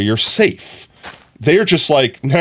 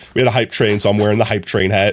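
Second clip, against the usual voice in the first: ordinary talk, nothing marked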